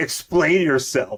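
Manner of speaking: mild, held-in yell, high. Retelling a comic scene in which Batman yells: Batman yelling. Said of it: "He just yells at him".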